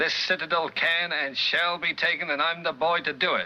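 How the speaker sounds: put-on mid-century old Hollywood transatlantic accent. Reading a line from a 1945 text aloud, in a Hollywood transatlantic accent. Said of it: "you can hear the Hollywood transatlantic accent".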